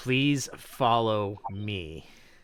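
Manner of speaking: very robotic, mechanical voice. Voicing the gate guard turning to the three players, in a very robotic voice. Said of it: "it says in a very robotic voice".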